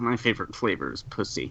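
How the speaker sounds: muttering under his breath. Voicing a character who mutters a rude line: muttered under his breath. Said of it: "Noble just mutters".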